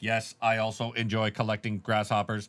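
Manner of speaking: lifeless, flat, wooden monotone delivery. Mocking how a bad actor might sound: flat, wooden line delivery. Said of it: "a very wooden, shitty actor".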